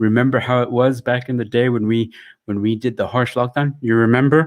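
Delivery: ordinary delivery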